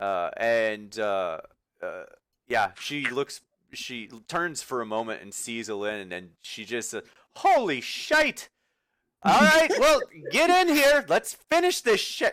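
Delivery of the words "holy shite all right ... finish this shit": incredibly loud, very high, shrill, far-carrying yell. Voicing a character who turns, sees a newcomer and calls them in, incredibly loud. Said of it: "incredibly loud. Her voice carries everywhere".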